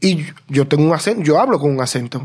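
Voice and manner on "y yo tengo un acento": normal talking voice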